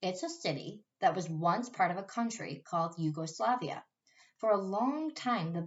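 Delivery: ordinary delivery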